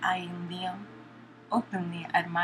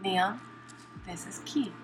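plain reading voice

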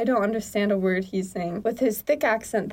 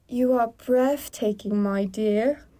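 put-on British accent, sounding native. On another try at a scripted line, the speaker delivers it in a British accent. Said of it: "say that in the correct accent".

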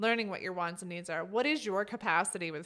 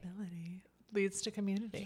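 hushed, soft, close-mic ASMR murmur; 5 dB quieter than usual. Leaning close to the microphone to say a catchphrase: asmr voice. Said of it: "It's my A S M R voice".

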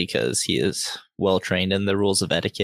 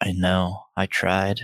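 muttered, mumbled under the breath. Narrating a character who answers by muttering under his breath. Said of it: "he just kind of mutters under his breath".

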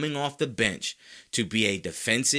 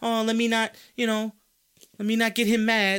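nervous, timid, scared voice; 11 semitones higher, 3 dB louder than usual. Mocking how critics want the player to talk: mock scared voice. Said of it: "talk like a dude who's scared".

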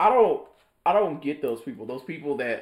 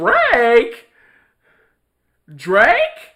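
very loud, very high, acted starstruck disbelief; 9 semitones higher, 10 dB louder than usual. Speaker acts out a store worker turning to recognize a customer: acting shocked. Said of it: "you're just so shocked to see him".

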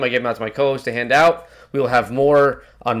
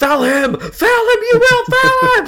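put-on, very high, slow, drawn-out rising yell; 5 dB louder than usual. Describing what he yells whenever a certain player gets the ball, retelling a yell. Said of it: "I just start yelling".

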